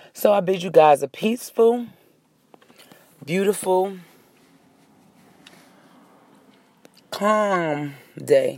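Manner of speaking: talking with mouth full. Signing off to viewers while eating gummy vitamins, chewing while talking. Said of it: "I'm chewing on my own vitamin".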